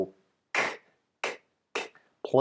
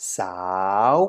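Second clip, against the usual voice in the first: the word sao said with a rising tone; 3 semitones lower than usual. Tone lesson on a high-class consonant without tone mark, rising tone on sao. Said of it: "results in a rising tone".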